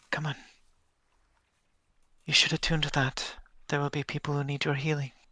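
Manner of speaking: quiet, soft, hushed half-whisper. As Tuki, helping Minova up, speak half-whispering. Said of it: "just whispers".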